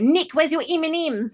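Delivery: put-on Australian accent. Retelling what Australian co-workers ask: imitating Australian co-workers. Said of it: "my Australian and New Zealand co-workers like to come over and go".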